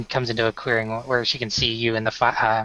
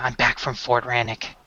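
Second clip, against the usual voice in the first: soft hushed whisper. Voicing a character who walks up to someone on watch at the campfire, whispering. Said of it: "She's whispering just to be nice".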